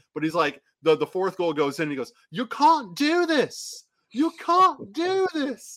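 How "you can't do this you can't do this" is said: very high, terrible put-on British accent. Quoting a man's shout as a goal goes in, terrible british accent. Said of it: "I'm gonna do a terrible British accent here".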